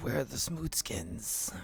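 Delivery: words hissed out in a hissing voice. Voicing a creature's question in the scene: hissing voice. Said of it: "it hisses out".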